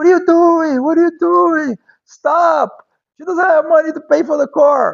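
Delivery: very high, loud, shrill, urgent pleading screaming. Speaker recounts his brother screaming at him, imitating brother screaming. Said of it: "my brother started screaming at me".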